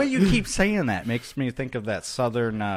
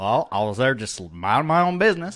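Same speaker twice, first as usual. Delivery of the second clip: put-on drunk hillbilly voice. Speaker acting out a man asked how he got his scar, drunk hillbilly voice. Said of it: "would sound like the drunk hillbilly".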